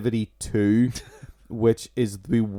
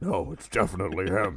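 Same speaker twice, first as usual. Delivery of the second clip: put-on drunk superhero voice, lower and quieter; 4 semitones lower, 7 dB quieter than usual. Joking about a villain's alias, answering as Batman: drunk Batman voice. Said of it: "that's my drunk Batman".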